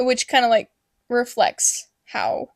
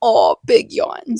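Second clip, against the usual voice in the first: mock cooing baby talk, louder; 4 dB louder than usual. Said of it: "the baby talk is so bad".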